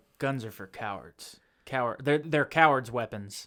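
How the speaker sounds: robot-like voice. Retelling a Batman scene line about guns: robotic Batman voice. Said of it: "very robotic".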